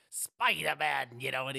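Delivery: very loud, belted-out, creepy voice. Doing an impression of a movie villain saying Spider-Man: creepy Willem Dafoe voice. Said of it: "this is just an impression".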